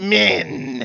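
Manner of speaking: growled word. During a game session, retelling how she answered who captured her, imitating a growl. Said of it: "she says it in this growl".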